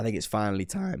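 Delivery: voice cracking and breaking. Host moving on to his predictions, with his voice cracking. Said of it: "holy voice crack".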